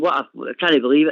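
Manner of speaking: ordinary talk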